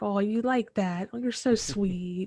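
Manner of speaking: put-on baby-talk cooing. Petting a fox elk in character: baby talk to an animal. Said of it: "I start talking to it like, uh, a horse enthusiast talks to a horse".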